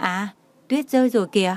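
plain

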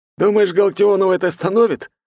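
very high, loud, mocking, sarcastic voice. One comrade asks the other a question, sarcastic. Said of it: "С сарказмом осведомился Морозов".

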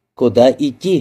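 ordinary delivery, nothing marked

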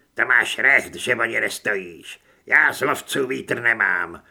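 growling. A narrator reads a character's reply to a tall stranger, growled. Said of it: "Zavrčel přes doutník".

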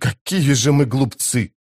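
ordinary delivery

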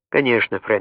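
ordinary delivery

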